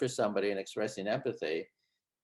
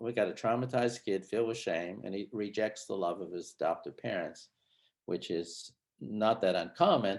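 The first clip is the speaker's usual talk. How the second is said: usual speaking voice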